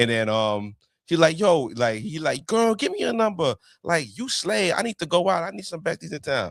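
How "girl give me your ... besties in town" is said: put-on, pitched-up, exaggerated camp voice. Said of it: "he would talk like he's a homosexual".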